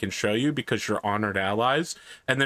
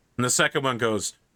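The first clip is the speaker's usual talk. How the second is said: ordinary talk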